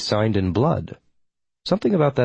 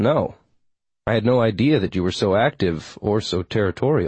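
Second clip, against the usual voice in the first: ordinary delivery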